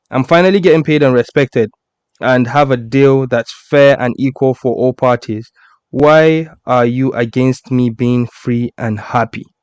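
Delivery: ordinary talk, nothing marked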